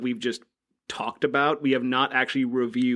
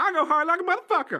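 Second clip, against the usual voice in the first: very high, silly, weird, made-up put-on voice. Introducing himself on a podcast as a joke: weird put-on voice. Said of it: "What voice is that?".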